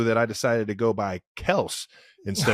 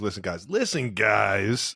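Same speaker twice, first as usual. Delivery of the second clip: deep, deliberate sportscaster voice, "guys" stretched out; 3 semitones lower than usual. After hearing a clip of Jones's impersonation, show how he drops down: lowered Chris Collinsworth impression. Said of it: "He goes down an octave when he says".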